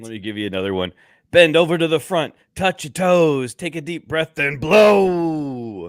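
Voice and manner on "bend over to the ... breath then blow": very high, loud hype-man yell, "blow" drawn out. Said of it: "I want more [name] [name] impressions".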